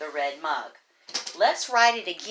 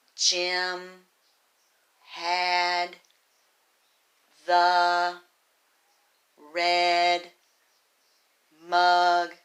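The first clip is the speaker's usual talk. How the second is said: very slow, flat, choppy, word-by-word robotic voice; 4 dB louder than usual. Showing how not to read a sentence aloud: choppy robotic word-by-word reading. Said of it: "that's going to sound like a robot".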